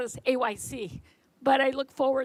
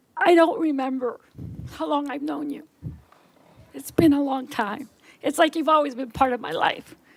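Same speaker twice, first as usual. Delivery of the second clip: moved, full of emotion, with a raised voice; 2 semitones higher, 6 dB louder than usual. Addressing a person who is retiring after a long friendship, emotional. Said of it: "sorry for getting so emotional".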